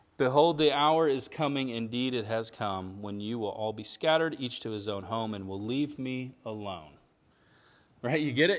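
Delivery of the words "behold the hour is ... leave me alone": ordinary delivery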